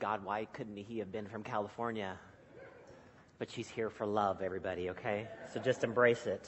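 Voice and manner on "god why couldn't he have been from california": mock under-the-breath mutter, lower and quieter. Speaker retells what his wife says on days like this, mock under-the-breath mutter. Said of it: "just subtly under her breath".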